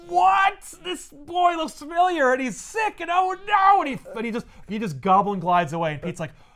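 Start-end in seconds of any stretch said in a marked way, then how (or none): 0.0-3.8 acted-out flustered, very high-pitched, drawn-out panic. Retelling a comic scene where the goblin freaks out: imitating the goblin freaking out. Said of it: "And the goblin's like, freaking out".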